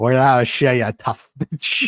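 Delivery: put-on over-the-top Irish accent. Reviewing a show, quoting a character's line in an exaggerated irish accent. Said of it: "it's such an exaggerated accent".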